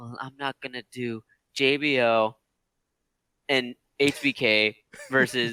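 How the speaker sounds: deadpan, flat, level monotone delivery. Retelling a wrestling segment and quoting what Stephanie said: Stephanie's monotone delivery. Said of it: "And in monotone, Stephanie said".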